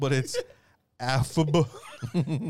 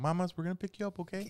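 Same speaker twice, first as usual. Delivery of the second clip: extra sweet, kindly, nicest-possible voice; 2 semitones higher, 8 dB quieter than usual. Acting out a firefighter picking someone up: nicest voice. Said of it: "I would have the nicest voice".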